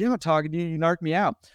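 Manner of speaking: imitated yelling. Recounting a man who accused him of narking, retelling a yell. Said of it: "he is yelling at the top of his lungs".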